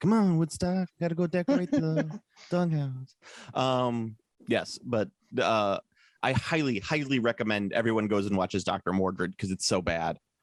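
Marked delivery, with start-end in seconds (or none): 0.0-3.2 casual, offhand talking voice, a little higher pitch. Imagining an actor playing Snoopy: Bruce Willis voice as Snoopy. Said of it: "Bruce Willis should totally play Snoopy, like, just talking".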